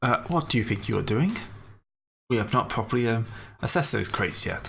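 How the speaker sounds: put-on imperious voice with an accent. Voicing an Imperial Customs officer stopping the crew: imperious accent. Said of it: "much more imperious ac-, accent".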